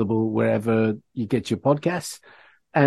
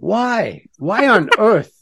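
very high, very slow, drawn-out incredulous cry; 10 semitones higher, 5 dB louder than usual. Reacting to the other speaker naming a favorite record: incredulous. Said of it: "Why do you say it like I just said something ridiculous?".

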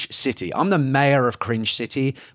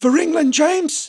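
odd, bizarre, very high put-on voice; 14 semitones higher than usual. Announcing the first nominee for Best Line, in a bizarre put-on voice. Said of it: "I don't know why I did that in a really bizarre way".

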